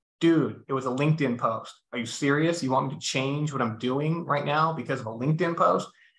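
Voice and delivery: ordinary talk, nothing marked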